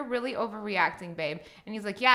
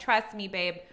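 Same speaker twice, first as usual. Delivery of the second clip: ordinary delivery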